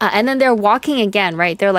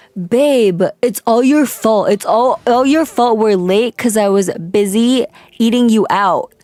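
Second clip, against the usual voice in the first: ordinary delivery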